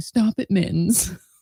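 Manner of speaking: cranky, grumpy grown-man scolding voice. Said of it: "you could just hear a grown man saying".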